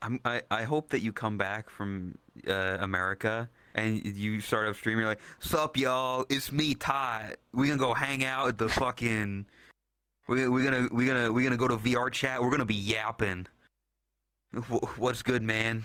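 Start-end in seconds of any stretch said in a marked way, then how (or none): 5.4-15.8 put-on Southern California accent. Imagining another speaker starting a stream back from America: imitating a SoCal accent. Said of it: "Just the, the SoCal accent".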